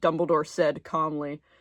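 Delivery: ordinary delivery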